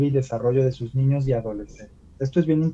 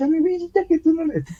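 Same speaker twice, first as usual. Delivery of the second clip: put-on baby talk, much higher pitched. Describing how parents talk to their child, imitating parent's baby talk. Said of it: "le hablamos en ese tono".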